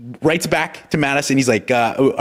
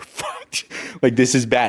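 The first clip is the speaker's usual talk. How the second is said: hysterical, tearful outburst, slow crying lament; 2 semitones lower, 4 dB quieter than usual. Retelling how a man came out after the meeting: imitating someone hysterically crying. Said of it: "just hysterically crying".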